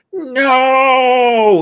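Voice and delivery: long, very high, loud, drawn-out wail. Voicing a woman who turns as the lab blasts: long, extended cry. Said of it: "in that sort of long, extended".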